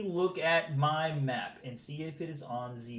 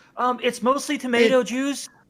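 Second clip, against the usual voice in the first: very loud, shrill, very high shout from far off; 10 semitones higher, 11 dB louder than usual. Voicing someone answering from afar, yelling back from a distance. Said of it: "you hear someone yelling back from the thing".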